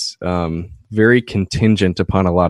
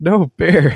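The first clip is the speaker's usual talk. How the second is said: shrill, very high shouted yell; 10 semitones higher than usual. Recounting yelling down to them from the top of a ridge: retelling a yell. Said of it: "As I'm yelling to them".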